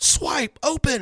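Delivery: very high, loud screaming yell. Retelling buddies with wrong gloves yelling at their phone: imitating buddies yelling at phone. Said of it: "they're yelling at it".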